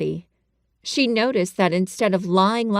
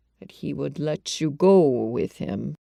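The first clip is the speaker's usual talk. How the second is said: very quiet, low, hushed undertone; 5 semitones lower than usual. Reading a doctor's line about a nurse going along: very low voice. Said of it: "in a very low voice".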